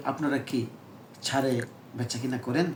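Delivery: normal talking voice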